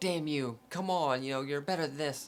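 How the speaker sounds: exasperated, angry, scolding yell. Retelling a man's outburst at someone, retelling an angry yell. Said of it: "He's yelling, screaming".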